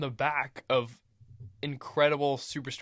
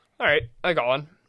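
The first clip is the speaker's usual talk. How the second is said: loud, confident delivery, sure of itself. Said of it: "said it so confident".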